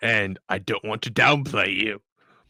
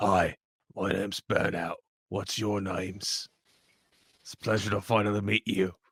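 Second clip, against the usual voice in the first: hushed, attempted half-whisper stage whisper; 4 dB quieter than usual. Playing Burnout creeping up behind Kevin's character to greet two people: Burnout half-whispering. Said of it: "That was my attempt at making Burnout whisper".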